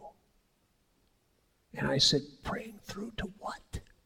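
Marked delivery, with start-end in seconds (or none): 2.4-3.8 quiet whispered voice. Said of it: "why are we whispering".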